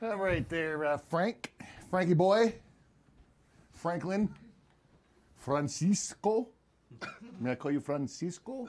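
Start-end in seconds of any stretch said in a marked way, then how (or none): 5.4-8.7 soft, put-on Portuguese accent. Addressing the witness, his client, in a Portuguese accent. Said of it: "That's my Portuguese accent".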